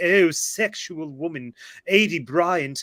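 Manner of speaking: put-on pompous, bad British accent, very slow, drawn out. Retelling a comedy sketch actor's line: pompous terrible british accent. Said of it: "doing this really pompous, terrible British accent".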